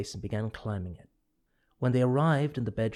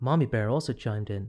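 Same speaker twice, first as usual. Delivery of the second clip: ordinary delivery, nothing marked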